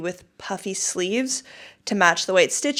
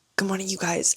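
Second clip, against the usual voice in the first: hushed, whispered voice; 4 dB quieter than usual. Greeting viewers very early in the morning, whispering. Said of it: "I'm whispering because it's very early".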